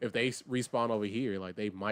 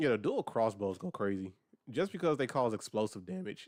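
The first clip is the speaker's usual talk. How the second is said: voice cracking mid-sentence. Player chatting during a game, voice cracking mid-sentence. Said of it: "I had a voice crack right there".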